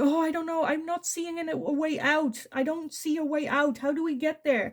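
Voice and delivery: put-on high, anxious, fretting, panicky boy voice. Retelling a story of a boy lost in woods: acting a stressed, freaking-out boy. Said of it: "freaking out a little bit and stressed".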